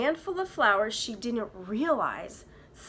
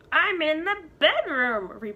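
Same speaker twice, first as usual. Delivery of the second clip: loud, odd, quavering, wobbly put-on old-woman voice; 6 semitones higher, 5 dB louder than usual. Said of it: "replied the wolf in a strange wobbly voice".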